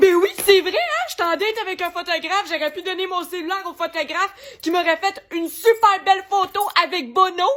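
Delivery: high, loud, sarcastic, mocking self-scolding tone. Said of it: "je me dis".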